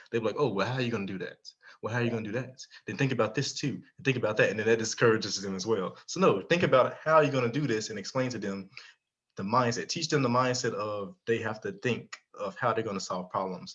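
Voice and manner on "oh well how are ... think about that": mocking, condescending adult tone. Imitating how adults question a young person's idea: imitating condescending adults. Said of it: "they do it condescendingly".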